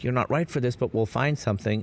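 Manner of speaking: plain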